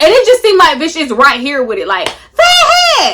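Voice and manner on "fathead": very high, grating, agitating voice. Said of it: "I hear this agitating, grating".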